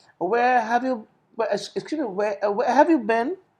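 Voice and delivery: stumbling start with uhs, restarts and self-corrections. Coaching a speaking student on sounding natural, hesitant with fillers. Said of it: "Maybe you can occasionally use a er".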